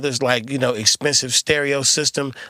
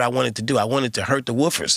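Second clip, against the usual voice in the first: normal talking voice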